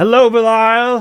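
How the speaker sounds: very high, shouted. She turns across the table and greets belial, shouting a greeting. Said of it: "She shouts".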